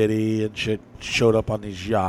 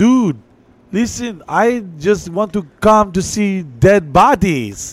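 put-on heavy Puerto Rican accent, very high and slow; 9 semitones higher, 7 dB louder than usual. Retelling what a friend said about coming along: imitating Ivan's strong Puerto Rican accent. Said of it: "he had a really, really strong accent".

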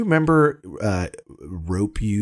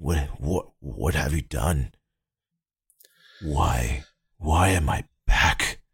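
coughing villain voice, lower pitch; 4 semitones lower than usual. Narrating a game, voicing Wolfgang just revived from a charred husk: Wolfgang, coughing, charred husk. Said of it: "coughs horribly as a small amount of smoke comes out of the blackened and charred husk that was once known as [name]. / coughs horribly as a small amount of smoke comes out of the blackened and charre".

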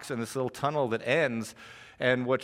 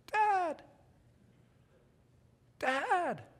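very high, frightened, scared little voice; 3 dB quieter than usual. Father retelling his child calling to him in a cave, imitating a scared tiny voice. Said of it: "this scared, tiny voice".

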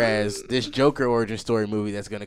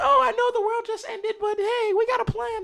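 weird, very high-pitched, cartoonish put-on voice. Mocking upbeat Marvel movie dialogue, in a weird put-on voice. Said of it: "I don't know why I keep doing that weird voice".

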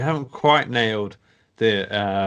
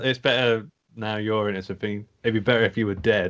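ordinary talk, nothing marked

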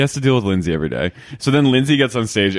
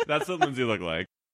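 plain

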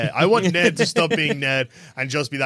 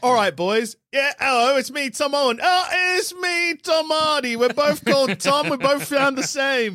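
put-on heavy, high-pitched Cockney accent; 10 semitones higher than usual. Joking about being paid to play Venom: Cockney Tom Hardy impression. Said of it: "The Cockney Toms".

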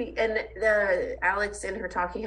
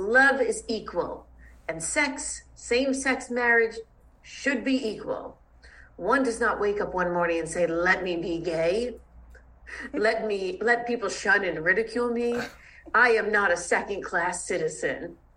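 slow, deliberate, measured speechmaking cadence. Reading out a written-down speech, imitating how Sonia gave it: imitating Sonia's speech delivery. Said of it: "I'm gonna do it with the infliction of how she gives the speech".

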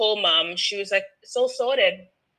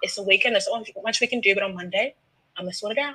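cool, collected, calm, soothing and comforting voice. Retelling mum soothing a crying caller on the phone: imitating mum's calm soothing voice. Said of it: "the real Miss Cool, Calm, Collected".

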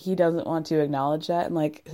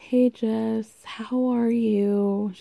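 put-on weird, high, very slow sweet boy voice; 5 semitones higher than usual. Retelling a reunion scene, imitating Colt's weird sweet boy voice. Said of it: "Colt goes into this weird, like, sweet boy voice".

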